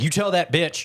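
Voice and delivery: put-on high, super thick Southern country accent. Retelling what a female announcer said at a women's game, super thick country accent. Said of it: "super thick country accent, kind of deep Southern accent".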